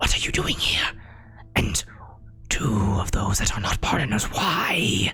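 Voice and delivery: breathy, whispered shadow demon voice. Voicing a shadow demon as it speaks so Mud can hear: shadow demon voice. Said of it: "this shadow demon speaks. Uh, it says".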